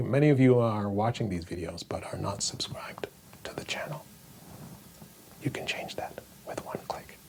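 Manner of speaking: hushed whisper. A video host asks viewers to subscribe to the channel, whispering. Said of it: "I don't know why I'm whispering".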